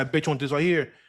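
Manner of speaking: normal talking voice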